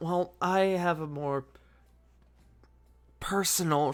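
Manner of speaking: whispered tone. Voicing Diana answering how long they've worked for him: whispered tone. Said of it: "she sort of says in a whispered tone".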